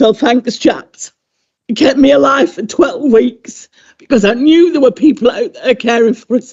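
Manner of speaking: voice cracking through tears, crying. Thanking the dustbin men who emptied your bin through the pandemic, crying. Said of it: "Sorry, I'm crying".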